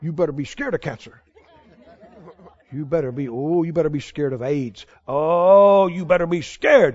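put-on devil voice. Speaker acts out what the Devil says to people who laugh, voicing the Devil. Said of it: "He don't like it when you laugh".

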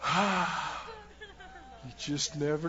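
mock defeated sigh, soft and low.

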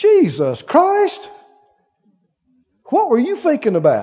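put-on casual, high, swooping swearing outburst. Showing how people use the Lord's name as a curse: imitating someone swearing. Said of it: "I've heard people say it like this".

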